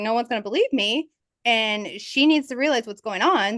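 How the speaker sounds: ordinary talk, nothing marked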